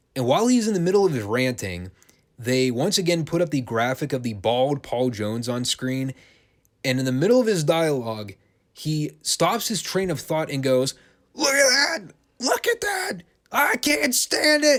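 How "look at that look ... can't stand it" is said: put-on, very high, drawn-out top-of-lungs screaming rant. Acting out a man's on-air rant as a graphic appears, imitating him screaming. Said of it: "he's screaming at the top of his lungs".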